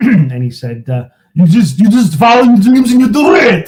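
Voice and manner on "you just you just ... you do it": very high, raised, ridiculous-sounding silly voice. Retelling what a man said to him, impression of that man. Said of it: "do impressions too, huh?".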